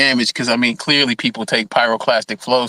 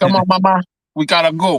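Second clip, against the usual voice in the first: put-on relaxed Puerto Rican accent, pitched up; 7 semitones higher, 3 dB louder than usual. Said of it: "now you sound like every other Puerto Rican I know".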